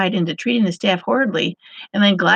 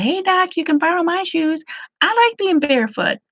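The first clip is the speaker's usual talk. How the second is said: put-on earnest yell, pitched up; 9 semitones higher than usual. Retelling a patient in the waiting room calling out: imitating someone yelling out. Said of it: "hears me and yells out".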